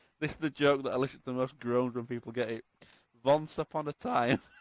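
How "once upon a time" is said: heavy put-on German accent, slower. Explaining a pun in a story, saying the phrase in a heavy fake German accent. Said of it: "spoken with a heavy fake German accent".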